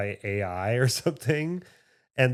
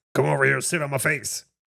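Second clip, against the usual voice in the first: distorted acted ghoul voice; 3 dB louder than usual. Mimicking the other speaker, sounding like a messed-up Beetlejuice voice. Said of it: "You sound like a fucked up Beetlejuice".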